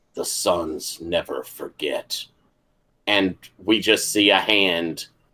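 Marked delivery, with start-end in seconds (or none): 0.2-2.3 very hushed, quiet, low voice. Storyteller voices an unseen figure behind a crying character: very quiet voice. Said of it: "just a very quiet voice say".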